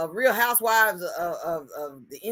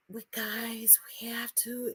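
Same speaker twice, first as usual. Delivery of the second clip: mock seductive voice, higher and quieter; 5 semitones higher, 12 dB quieter than usual. Imitating how a woman in a video spoke: imitating a porn-like voice. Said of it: "the way she was".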